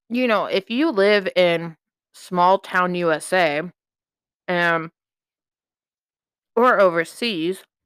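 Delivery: talking while eating, mouth full. Mid-conversation, the speaker is eating and talking with mouth full. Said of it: "sorry, I'm eating".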